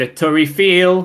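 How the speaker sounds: French words spoken in a Geordie accent. Naming a Paris sight in French: French words in Geordie accent. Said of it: "doing French words in a Geordie accent".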